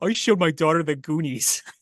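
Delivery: talking through laughter. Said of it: "I'm still laughing".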